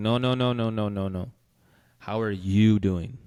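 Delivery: sudden, drawn-out interruption. Retelling how a best friend abruptly cut in: imitating Isaac interrupting abruptly. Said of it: "he interrupted me, like, very abruptly".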